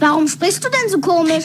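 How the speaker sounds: very high, squeaky cartoon bee voice.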